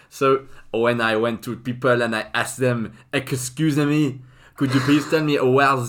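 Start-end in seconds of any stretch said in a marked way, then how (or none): 3.1-5.7 heavy, bad put-on French accent, pitched up. Speaker retelling asking people for directions, in a thick French accent. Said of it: "speak in a thick French accent".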